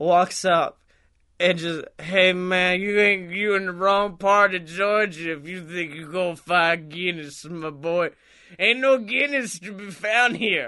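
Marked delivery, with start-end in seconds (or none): 2.0-10.7 put-on voice of a very drunk man. Retelling what a very drunk man said at a store: imitating a very drunk man. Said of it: "the drunkest man I've ever seen in public".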